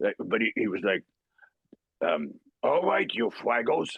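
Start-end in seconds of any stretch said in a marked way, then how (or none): 2.6-3.9 pitched-up cartoon voice, R's dropped. Recalling a voice borrowed from a show: Fraggle Rock character voice, no R's. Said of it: "I sort of borrowed that voice that I heard, he couldn't pronounce his R's, like Elmer Fudd sort of thing".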